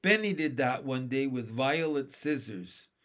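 plain reading voice

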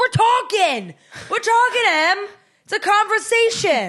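put-on very high, drawn-out, swooping New York accent. Retelling what dad said during a tense conversation: New York accent. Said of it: "suddenly my dad has a New York accent".

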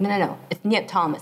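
ordinary talk

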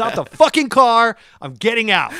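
acted, shrill, very loud, pissed-off, furious voice. Retelling wanting out of the movie: mock angry demand. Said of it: "I was pissed".

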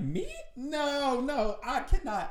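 voice up an octave.

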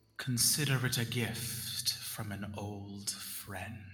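hushed whisper. Narrating to a player, a voice speaks right into their ear: whispering. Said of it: "And you hear a whisper in your ear".

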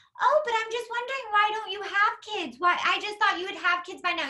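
high, sugary, overly nice fake-concern voice. Act out the turkey baster comment, imitating Dorinda trying to sound really nice. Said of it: "tries to say it in this really nice way".

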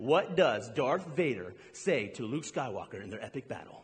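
very low, hushed, dramatic movie voice. Speaker quizzing listeners about a movie battle scene, in a dramatic movie voice. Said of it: "I got the movie voice there".

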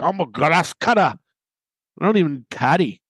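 big, thick Scottish brogue, roughly done. Acting out a greenskeeper dad answering Amanda Bayless after his son's first win, in a butchered thick Scottish brogue. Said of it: "it's that big, thick Scottish brogue, which I'm sure I'm going to butcher".

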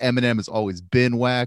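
normal talking voice

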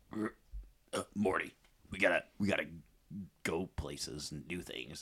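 very quiet, soft, low, very slow cartoon voice. Answering a request for a Rick impression: Rick voice. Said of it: "Can you do a good Rick or Morty?".

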